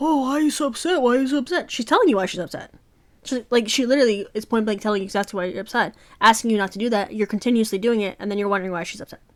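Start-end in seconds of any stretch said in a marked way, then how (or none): 0.0-1.7 higher-pitched, clueless, oblivious, dismissive voice. Retelling how the boyfriend keeps asking why she is upset: imitating the boyfriend. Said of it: "And he's just ideally being like".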